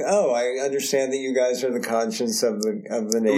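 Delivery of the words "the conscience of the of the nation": normal talking voice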